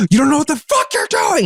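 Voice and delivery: mock very high, shrieking scream. Retelling how a man followed after voting: imitating a man screaming. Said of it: "screaming behind me".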